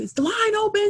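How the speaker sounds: very high, shrill, loud, carrying shout. Retelling a loud man who got in line behind a woman, retelling a loud yell. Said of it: "just yelling".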